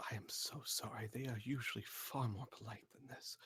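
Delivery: hushed, very quiet and soft. Apologizing to a character for the others, in a very quiet voice. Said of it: "in a very quiet voice".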